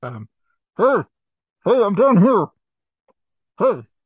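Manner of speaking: muffled, stifled voice. Game master voices an enchanted meat pie hidden under a player's shirt: muffled voice. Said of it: "You hear a muffled".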